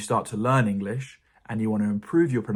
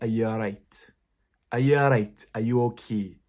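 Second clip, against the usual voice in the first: speaking with Scottish accent. Speaker demonstrates phrases used to get into an accent, in a scottish accent. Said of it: "if I'm trying to speak in a Scottish accent".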